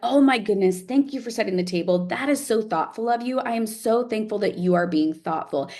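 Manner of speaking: high, really amped-up, enthusiastic gushing voice.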